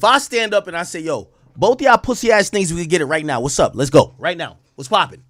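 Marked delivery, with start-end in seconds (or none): 1.0-5.1 put-on aggressive, confrontational voice. Acting out a passenger on a plane picking a fight: acting aggressive, picking a fight. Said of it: "Could you calm down?".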